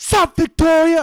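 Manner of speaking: very high, very loud hollering. Retelling greeting a friend across a store: imitating own past yell. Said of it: "I'd yell throughout the whole store".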